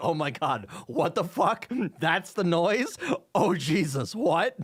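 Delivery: thrilled, gleeful, delighted outburst. Retelling a coworker hearing the machine noise: imitating a delighted coworker. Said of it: "the happiest face".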